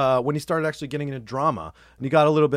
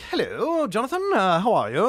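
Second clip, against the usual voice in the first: fake British accent, higher pitch; 6 semitones higher than usual. Retelling how a guy from high school greeted him, in a fake British accent. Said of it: "faked a British accent".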